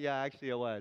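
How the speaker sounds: mimicked laughing speech. Answering his daughter's teasing, retelling his own laughing reply. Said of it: "I'll start laughing going".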